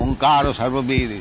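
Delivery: ordinary delivery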